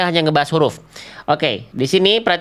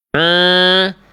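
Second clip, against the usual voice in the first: drawn-out a resonating through the nose; 3 dB louder than usual. Showing a common mistake in pronouncing ain, nasal 'a' sound. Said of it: "suaranya sengau masuk ke dalam rongga hidung".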